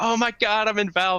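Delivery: put-on very high, ecstatic, overjoyed outburst. Retelling a friend's reaction on arriving at valve: imitating an ecstatic friend.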